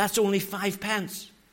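half-whispered, hushed stage whisper. Retelling a remark to his wife during market haggling: retelling a half-whisper. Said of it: "I whispered in my dear wife's ear".

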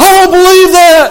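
furious, loud, high, angry shouted outburst. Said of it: "he was just furious".

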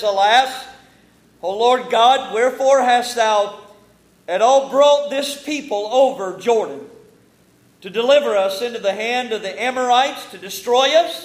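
loud, bitter lament. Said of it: "sense the bitterness in that tone".

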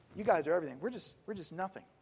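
ordinary talk

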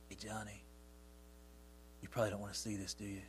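soft, lifeless, dead-sounding, barely-there near whisper. Showing how not to offer a child something from the Bible, soft, dead voice. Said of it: "don't be soft and dead".

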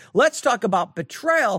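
ordinary talk

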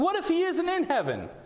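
very high-pitched sarcastic tone. Retelling how a man asked the lady a question, retelling a sarcastic question. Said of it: "He asked her sarcastically".

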